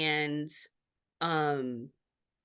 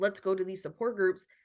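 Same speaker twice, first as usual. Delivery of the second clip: usual speaking voice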